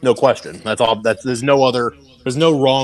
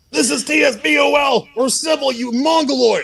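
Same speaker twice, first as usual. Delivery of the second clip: drawn-out, slow, very high ring announcer voice. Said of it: "you've got that announcer voice".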